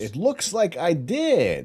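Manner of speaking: cartoon vampire voice, very high, very loud, swooping. Checking a downloaded file set, slipping into the wrong voice, vampire potato voice. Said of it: "I still had the the vampire potato in my head".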